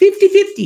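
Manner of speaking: high, loud, excited voice.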